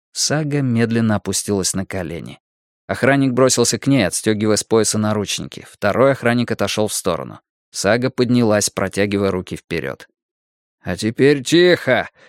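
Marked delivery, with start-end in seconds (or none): 10.8-12.1 uneasy, on-edge, nervous commanding tone. A guard approaching with handcuffs orders Saga, a nervous order. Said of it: "нервно велел охранник".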